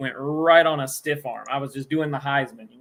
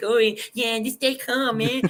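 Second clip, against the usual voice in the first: put-on mocking tone, higher pitch; 8 semitones higher than usual. Retelling how one friend mocked the friend who was helping: imitating a friend's mocking tone. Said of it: "making fun of the friend that's helping me".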